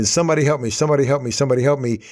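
put-on loud hollering. Speaker tells a story of a man hanging from a branch: retelling a holler for help. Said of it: "and he's hollering".

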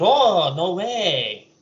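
put-on Spanish accent. Acting out what the neighbors will reply, in a Spanish-sounding put-on accent. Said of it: "how do you know they're Spanish?".

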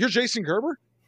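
loud shout at top of lungs, pitched high. Retelling a pharmacist shooting out of the back: imitating someone shouting. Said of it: "at the top of his lungs".

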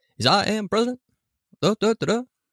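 bobbing up and down, with pauses. Describing to co-hosts how Obama talks, doing an Obama impression, rhythmic up-down. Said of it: "little rhythmic up and down with his voice".

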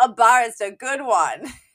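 put-on loud, derisive sneer in a spoiled rich boy voice.

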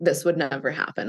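dry, flat, expressionless deadpan delivery. Imitating how someone with abandoned control would answer: imitating a deadpan reply. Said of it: "they would look at you deadpan and be like".

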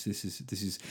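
grave, low, hushed, stern voice.

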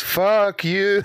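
very strong goat voice. Voicing a goat as the players fade away: very strong goat voice. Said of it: "in a very strong goat voice".

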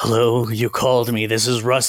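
put-on creepy, menacing, scary voice. Retelling a midnight call from a man the speaker had emailed, imitating Russ McCamey's scary voice. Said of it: "doing a whole like scary voice".

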